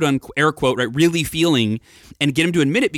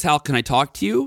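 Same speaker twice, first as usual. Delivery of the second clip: put-on voice cracking. Retelling his dad asking to talk, imitating a voice cracking. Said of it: "And his voice kinda cracked".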